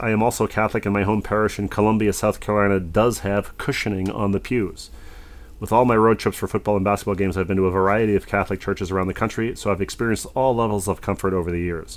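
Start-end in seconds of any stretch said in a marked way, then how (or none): none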